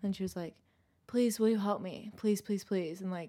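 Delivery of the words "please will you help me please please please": mock really desperate, pitiful pleading tone. Retelling how the stranger begged for help: imitating a desperate plea. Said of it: "really, like, desperate".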